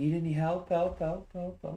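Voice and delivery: tiny, very high, squeaky mouse voice. Game master voices a character calling from down the hall, in Emery's mouse voice. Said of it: "the mouse voice of Emery".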